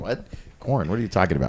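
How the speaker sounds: confused, baffled, caught off guard. Retelling another speaker's reaction to a remark about corn: imitating someone thrown off. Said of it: "I totally threw her off".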